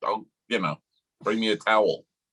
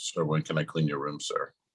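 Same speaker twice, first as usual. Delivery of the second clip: creepy put-on voice, lower and quieter; 6 semitones lower, 5 dB quieter than usual. Retelling how the cabin attendant outside the door talks: imitating the creepy cabin attendant. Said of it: "He says "sir" like every other word".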